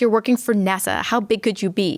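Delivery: ordinary talk, nothing marked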